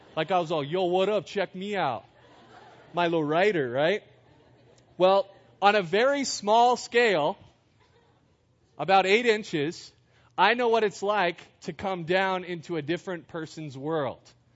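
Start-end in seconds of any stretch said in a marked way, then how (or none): 0.7-4.1 put-on tough-guy gangster voice. Recalling how leaning back in a chair changed the way they talked: gangster voice. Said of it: "automatically got like a gangster voice".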